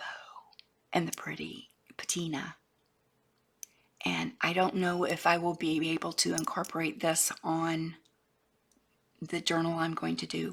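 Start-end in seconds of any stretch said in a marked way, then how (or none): 0.9-2.6 soft, breathy whisper. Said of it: "I'm whispering now".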